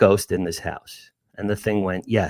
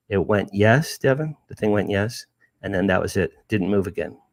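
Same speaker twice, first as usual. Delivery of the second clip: ordinary talk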